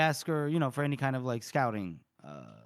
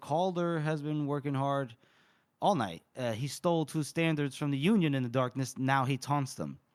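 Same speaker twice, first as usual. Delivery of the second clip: usual speaking voice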